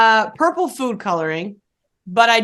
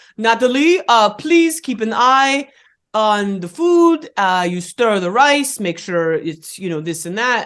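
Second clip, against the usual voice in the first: slow, unhurried put-on French accent. Retelling a friend's mom asking them to watch dinner: imitating a French accent. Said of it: "her mom is French and has the best accent in the world".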